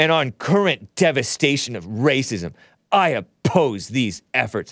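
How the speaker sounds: slow, put-on gruff voice. Reading a woman's statement aloud, the speaker uses a put-on gruff voice. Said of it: "I'm acting like she has a gruff voice".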